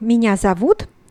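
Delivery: normal talking voice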